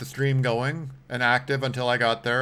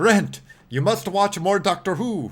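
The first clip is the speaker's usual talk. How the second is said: terrible, high, put-on German accent; 8 semitones higher, 4 dB louder than usual. Speaking to brent, in a terrible german accent. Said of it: "that's a terrible German impression".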